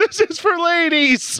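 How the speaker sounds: woman's voice, screaming.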